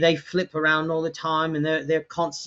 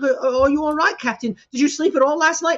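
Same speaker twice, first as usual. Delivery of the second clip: flustered character voice, higher pitch; 11 semitones higher than usual. Barrett runs up to the Captain who just woke, flustered Barrett voice. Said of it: "he's just very flustered".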